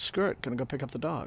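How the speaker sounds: normal talking voice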